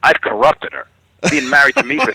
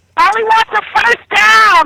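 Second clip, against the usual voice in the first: very high-pitched, parrot-like bird talking voice; 4 dB louder than usual. Riffing on a talking parrot, in a high-pitched parrot voice. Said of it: "comes back in a high pitched voice".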